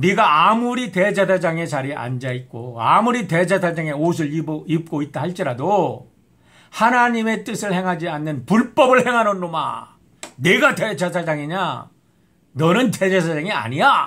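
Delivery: thundering reproachful tone.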